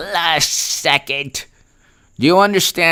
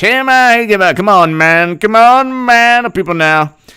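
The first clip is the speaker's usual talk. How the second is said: louder put-on rambling old politician voice. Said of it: "I'll give you his speech".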